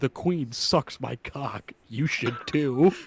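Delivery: put-on condescending tone. Quoting a character's line from a YTP to friends, mock-condescending. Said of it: "so condescendingly".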